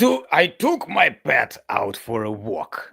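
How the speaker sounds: villainous, menacing evil prince voice. Voicing the prince who taunts the group: evil prince voice. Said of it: "Say it in your best evil prince voice".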